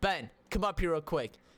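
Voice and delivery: normal talking voice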